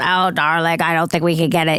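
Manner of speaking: very deep-toned female voice. Retelling a phone call about finding a skirt: imitating Pat's deep voice. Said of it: "Pat has a very deep voice".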